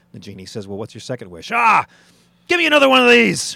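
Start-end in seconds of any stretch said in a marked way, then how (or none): 1.6-3.6 put-on Irish accent, much higher, louder, slower. Telling a genie joke, the man answers the genie in an Irish accent. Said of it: "I'm impressed by the Irish accent".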